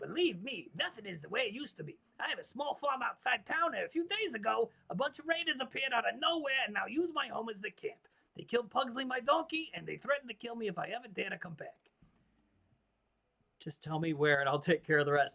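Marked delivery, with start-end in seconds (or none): 0.0-11.7 goofy, silly, played-up put-on New York accent. Reading a farmer character's lines aloud, silly new york accent. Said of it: "really silly kind of New York accents".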